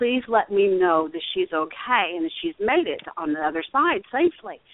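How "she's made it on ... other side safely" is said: ordinary talk, nothing marked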